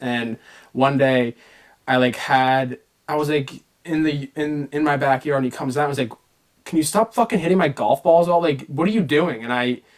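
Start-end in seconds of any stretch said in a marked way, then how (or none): 6.6-9.4 put-on fed-up, angry father voice. Recalling dad coming out to the backyard, retelling a yell. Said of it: "Him was like yelling at me".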